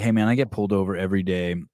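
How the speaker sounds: plain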